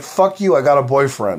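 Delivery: plain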